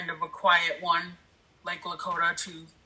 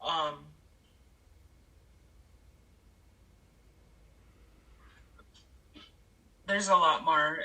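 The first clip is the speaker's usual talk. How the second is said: emotional, choked-up voice catching. Talking about the search for missing women, the speaker gets choked up with emotion. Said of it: "and I'm sorry, I'm just".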